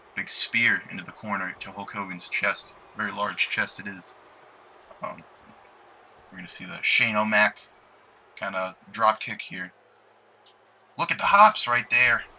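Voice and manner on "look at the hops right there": raised call, voice breaking and cracking mid-line. Commentating on a wrestling match, the speaker's voice is cracking. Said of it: "as my voice cracks".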